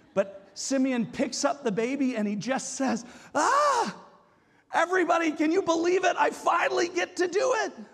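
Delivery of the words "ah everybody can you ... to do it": acted, loud, high, excited exclamation. Retelling a man in the temple picking up the baby: imitating a loud exclamation. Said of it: "saying out loud with this loud voice".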